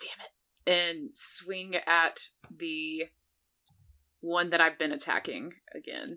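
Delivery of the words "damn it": muttered under the breath, quieter. Swinging at an enemy again: cursing under breath. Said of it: "curse under my breath".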